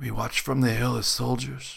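rough whispered voice. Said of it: "His voice a leathery whisper".

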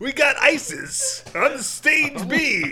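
very loud, very high strip club MC call. A podcast host jokingly announces a performer, in a strip club announcer voice. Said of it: "Sounds like the strip club voice".

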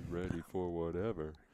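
put-on deep voice. Answering the other speaker jokingly: put-on deep voice. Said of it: "I like my deep voice".

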